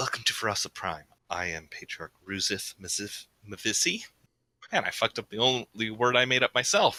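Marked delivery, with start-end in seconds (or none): 0.0-4.0 alien patriarch character voice. Voicing a bowing patriarch welcoming the players: voicing the alien patriarch. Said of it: "he bows and goes".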